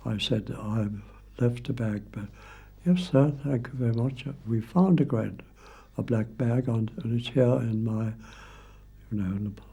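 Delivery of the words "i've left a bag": very calm, soft, composed telephone voice. Recounting ringing the club's hall porter one morning, retelling own very calm voice. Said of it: "in a very calm voice".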